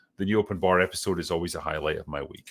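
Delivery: ordinary talk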